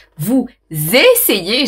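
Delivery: strong, heavy stress on essayez. Repeating a phrase to the listener, strong stress on essayez. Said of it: "j'appuie bien sur essayer".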